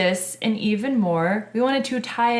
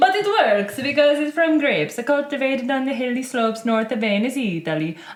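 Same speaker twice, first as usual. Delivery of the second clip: bad, fake, put-on Italian accent; 3 semitones higher than usual. Describing today's wine to the other speaker, in a fake italian accent. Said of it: "I know that's not your accent".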